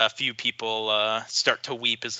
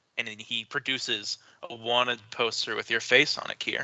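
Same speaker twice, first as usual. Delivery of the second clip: ordinary talk, nothing marked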